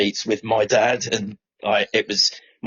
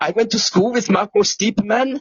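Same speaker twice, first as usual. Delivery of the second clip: bad, dreadful put-on German accent, very high; 11 semitones higher than usual. Quoting a man who approached the Norwich fans, in a dreadful German accent. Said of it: "excuse the dreadful German accent".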